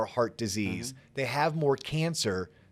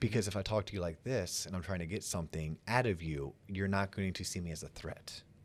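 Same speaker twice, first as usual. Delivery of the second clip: very hushed, quiet late-night radio DJ voice; 7 semitones lower, 10 dB quieter than usual. Explaining a book's advice on sounding non-threatening, in a late-night radio DJ voice. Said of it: "talking in your late night radio D J voice".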